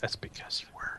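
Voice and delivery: soft, unvoiced, jabbing whisper. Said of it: "You should mess with her and just say".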